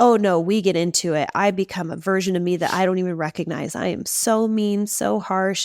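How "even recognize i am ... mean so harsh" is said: ordinary talk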